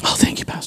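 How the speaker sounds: soft whisper with mock relief.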